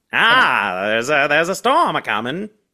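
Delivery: put-on dopey-sounding transatlantic accent. Recapping a movie, the speaker mimics Judd's transatlantic accent. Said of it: "Judd also sounds like a transatlantic idiot".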